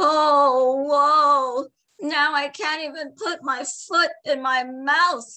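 high-pitched, slow groan with drawn-out "oh". A man complains to a joking friend, groaning. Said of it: "groaned Lolo de Noy".

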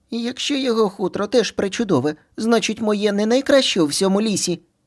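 very high, aggrieved, offended voice. Narrator reads Skvik interrupting his mother about whose fur is best, offended interruption. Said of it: "ображено перебив маму Сквік".

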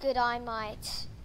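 Australian accent. Trying out a video-commentary voice, Australian accent. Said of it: "with my Australian accent".

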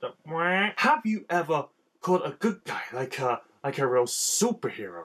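put-on cartoon villain voice. Trying an improvised impersonation of Robbie Rotten. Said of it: "attempt to do a bit of Robbie impre-, impersonation".

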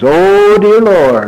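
put-on solemn, intoned, prayer-like voice. Describing how a man leads a public prayer: mock-solemn prayer intoning. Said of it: "then for sure he intones".

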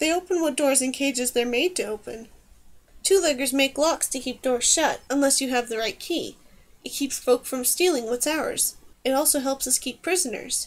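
plain

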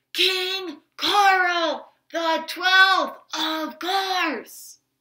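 stage whisper, slow and loud. Reading a story aloud, Pippi calling through cupped hands: stage whisper. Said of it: "in a stage voice whisper".

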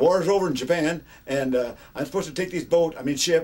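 booming, very loud, high announcer voice. Retelling what a young ship captain said: retelling fast talk. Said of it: "and he talked fast".

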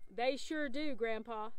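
plain reading voice

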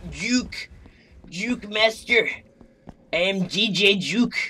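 put-on angry old-man voice. Playing a horror game, announce yourself in an angry old man voice. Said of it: "Angry old man voice".

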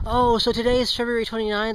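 ordinary delivery

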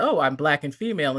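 ordinary talk, nothing marked

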